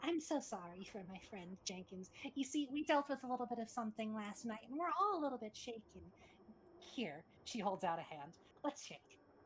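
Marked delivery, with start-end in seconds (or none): 0.0-6.1 forced fake-pleasant politeness, slightly high-pitched. Narrator voicing a woman who walks up closer to the listeners, fake pleasant mask. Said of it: "she's putting on a bit of a mask".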